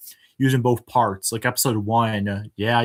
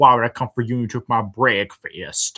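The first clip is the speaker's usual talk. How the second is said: funny, goofy improvised character voice. Recalling a returning character, the creator does his funny random character voice. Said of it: "I just had a lot of fun doing his voice".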